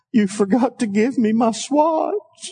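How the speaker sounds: put-on small, frightened, scared little girl voice. Retelling putting his daughter to bed, he voices her: imitating a scared little girl. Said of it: "with her little girl voice, this kind of scared".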